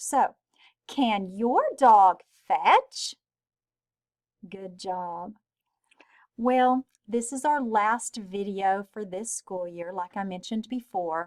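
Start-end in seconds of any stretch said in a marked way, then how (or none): 0.9-3.1 rising pitch at the end on fetch. Teacher reading a question aloud for students, voice rising at the end. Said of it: "we make our voice go up".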